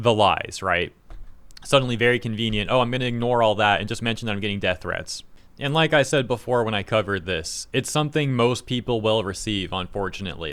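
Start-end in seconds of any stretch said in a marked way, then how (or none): none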